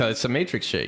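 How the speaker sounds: plain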